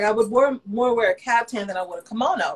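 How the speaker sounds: plain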